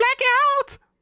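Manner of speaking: very high, shrieking falsetto yell. Recapping a wrestling match, quoting what Jericho yells: Jericho falsetto yell. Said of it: "In his finest falsetto. I hope the microphone registered that".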